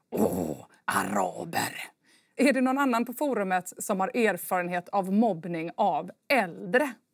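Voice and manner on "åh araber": deep sigh then very low, creaky snorted exclamation. Reading a forum story, the old woman's retort, snorted out after a deep sigh. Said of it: "drar hon en djup suck och frustar fram".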